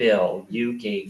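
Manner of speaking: plain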